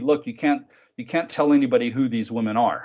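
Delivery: normal talking voice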